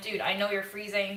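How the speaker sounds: ordinary talk, nothing marked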